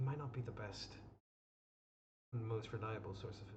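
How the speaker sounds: hushed whisper. Role-play character speaking as close to Haskell as possible, whispering. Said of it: "I'm trying to whisper this".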